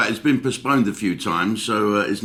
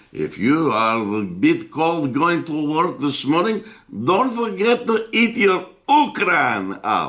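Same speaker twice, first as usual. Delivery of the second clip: put-on, comic, silly, high-pitched Russian accent; 6 semitones higher than usual. Speaker jokes with listeners, in a silly Russian accent. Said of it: "enough of my silly Russian accent".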